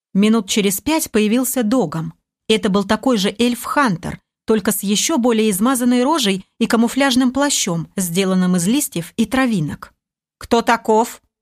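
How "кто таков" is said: dry, matter-of-fact tone. Narrator voicing the commander questioning a newcomer: dry question. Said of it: "сухо поинтересовался".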